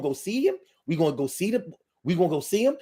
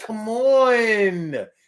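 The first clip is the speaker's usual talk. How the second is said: slow, dragging whine, stretched long; 4 semitones higher, 4 dB louder than usual. Describing levels of whining, showing people who do the slow whine: slow whine. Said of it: "people who do the slow whine".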